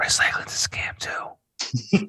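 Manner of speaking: slow, soft, conspiratorial whisper.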